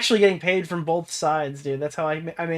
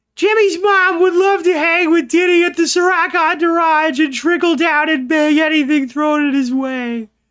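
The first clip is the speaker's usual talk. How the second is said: squeaky, very high-pitched, loud voice; 12 semitones higher, 7 dB louder than usual. Reading a tweet out loud on request: Carl Wheezer voice. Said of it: "should I make Carl Weezer say it?".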